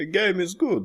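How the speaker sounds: fake Russian accent, pitched way up. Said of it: "where's your Russian accent?".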